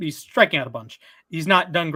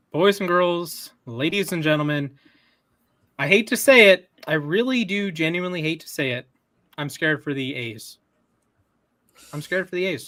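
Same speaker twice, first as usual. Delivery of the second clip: normal talking voice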